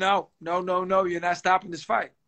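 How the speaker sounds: put-on dead-serious, firm tone. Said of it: "and I was very serious".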